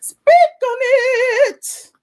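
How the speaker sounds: very high pitch, "it" long drawn out. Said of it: "You said it was better than Candy".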